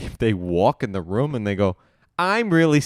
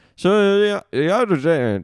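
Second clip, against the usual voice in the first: fake old man voice, higher; 7 semitones higher than usual. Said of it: "why do you sound like, ... like a grandpa".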